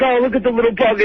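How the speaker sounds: emotional, upset, tearful voice, near crying. Retelling how he reacts to a small dead snake: imitating someone upset. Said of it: "He's all upset".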